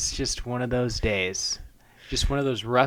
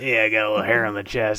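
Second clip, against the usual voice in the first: put-on low growly cartoon voice, louder; 5 dB louder than usual. Imitating a hungover cartoon character's lines: SpongeBob voice dropped an octave, growly. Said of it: "his voice drops down an octave or two".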